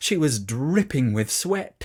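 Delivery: ordinary delivery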